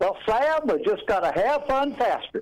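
a woman's Southern drawl. Speaker retells Kathy's remark during their talk about events: imitating Kathy's southern drawl. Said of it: "in her southern drawl said".

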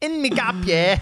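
Australian accent sounding British. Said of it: "That's fully British".

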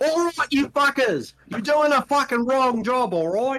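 high Australian voice, scolding. Play the chef in the back of a restaurant's kitchen in a Fox ad, Australian-sounding Gordon Ramsay voice. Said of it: "I don't know why I sound Australian".

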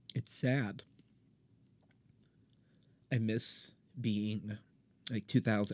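near tears, voice on the verge of crying. A speaker says they miss their early theater years: sounding close to tears. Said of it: "I sound like I'm about to cry".

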